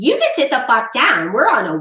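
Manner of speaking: put-on sassy, snippy voice. Acting out a restaurant host who gets sassy: imitating a sassy snippy host. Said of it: "wants to get sassy and snippy with you and be like".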